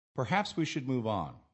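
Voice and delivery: "move on" with a firm falling finish. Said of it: "with a falling intonation at the end".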